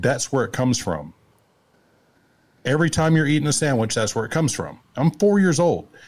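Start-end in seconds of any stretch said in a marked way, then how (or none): none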